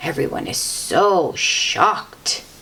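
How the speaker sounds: plain reading voice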